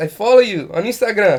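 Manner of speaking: halting non-native English phrasing. Retelling a friend's beach pickup line: imitating a friend's broken English. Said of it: "his English is very broken".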